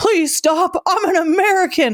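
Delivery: high-pitched yelling. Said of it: "I'm not yelling".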